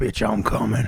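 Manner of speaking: deep, rough, gruff voice, dropped low. Recounting a voice half-whispered in someone's ear: deep, gruff half-whispered voice. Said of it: "There was this deep, gruff, or like rough voice, like".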